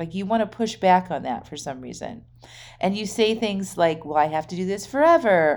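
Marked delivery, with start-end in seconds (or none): 4.0-5.6 mock whining voice, put-on and whiny. Acting out the listener pushing back on the advice: mock-whiny voice. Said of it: "in a very whiny voice".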